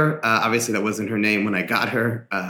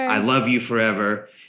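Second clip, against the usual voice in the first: usual speaking voice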